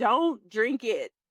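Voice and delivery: urgent, yelled call-out. Retelling a reaction to a TV scene: retelling a yell at the TV. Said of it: "I just yelled at the T V".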